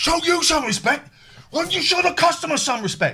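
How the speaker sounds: mock furious, very high-pitched angry shout. Retelling a customer-service call, speaker reenacts his angry shout back. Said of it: "I'm getting angry and I'm shouting".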